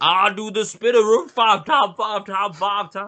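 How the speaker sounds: very high, squeaky, odd made-up voice. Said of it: "I don't know why he sounds like that".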